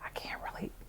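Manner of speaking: put-on whisper. Retelling a phone call, imitating the sister: imitating a whisper. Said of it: "I was whispering".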